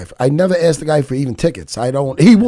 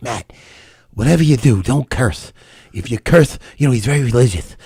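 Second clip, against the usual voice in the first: put-on lisp, lower pitch; 6 semitones lower than usual. Retelling the producer's warning not to curse: imitating Rory's lisp. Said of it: "a little bit of a lisp".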